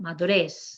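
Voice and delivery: madurez, final syllable REZ given the stress. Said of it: "we're gonna emphasize the last syllable".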